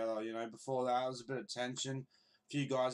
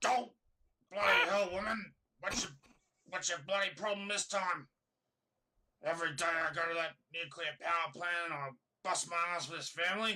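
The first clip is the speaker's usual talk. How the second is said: pitched-up Australian cartoon voice; 5 semitones higher than usual. Acting out a favourite Simpsons scene as Homer: Australian Homer Simpson impression. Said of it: "Australian Simpsons impression".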